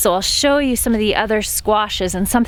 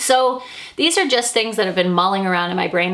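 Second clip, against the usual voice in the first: normal talking voice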